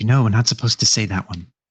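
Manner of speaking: shushing, shush-style hushed delivery. Voicing Larry shushing another character: shushing. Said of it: "Larry starts, like, shushing you".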